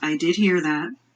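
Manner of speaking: mumbled, muttered under the breath, half to herself. Voicing a character who has moved seats down the bar and mutters back: muttering. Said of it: "she kind of mutters back".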